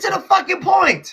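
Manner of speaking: shrill, very high yelling. Cutting off someone who asked for one minute to talk, shouting. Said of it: "you are raising your voice and shouting".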